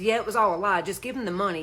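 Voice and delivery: ordinary talk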